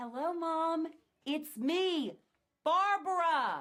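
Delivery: very loud, high, slow, drawn-out bellowed yell. Greeting her mom on arriving home, yelling. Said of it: "Why are you yelling at me?".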